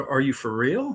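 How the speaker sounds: ordinary delivery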